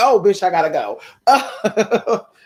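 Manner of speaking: slow delivery with laughter.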